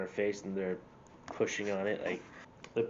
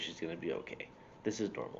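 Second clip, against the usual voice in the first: soft, hushed, close whisper; 3 semitones lower, 7 dB quieter than usual. Speaker retells what a man whispered in their ear, retelling a whisper. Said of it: "He whispers in my ear".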